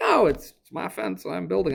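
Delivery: put-on Southern US accent. Imagining his reply about sharing the fence cost, in a put-on southern accent. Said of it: "I don't know why he's Southern now".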